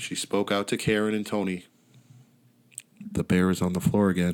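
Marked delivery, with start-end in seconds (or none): 3.1-4.3 low, quiet voice. Telling a story, voicing a character speaking out to two others: low voice. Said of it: "In a low voice".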